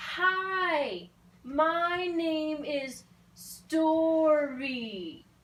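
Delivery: over-enunciated, very loud, very slow, overdone. Demonstrating what not to do when talking to a deaf person, suddenly loud voice. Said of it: "suddenly changing the volume of my voice".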